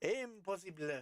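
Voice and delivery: slow French accent on "impossible".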